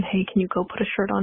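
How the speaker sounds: ordinary talk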